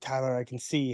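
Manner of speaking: hushed, confiding stage whisper. Retelling being blindfolded at a puzzle station: imitating a half-whisper. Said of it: "you whispered to me".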